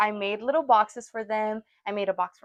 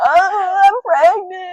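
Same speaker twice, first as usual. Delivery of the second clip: put-on very high, shrill, loud sobbing wail; 9 semitones higher, 9 dB louder than usual. Retelling telling an aunt about the pregnancy test, retelling own crying. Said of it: "And I started crying".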